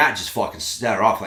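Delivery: ordinary talk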